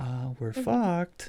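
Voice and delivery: very quiet, under the breath. Retelling a character's line about the broken hyperdrive: imitating someone saying it very quietly. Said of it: "he's just saying it very quietly".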